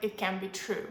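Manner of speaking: ordinary delivery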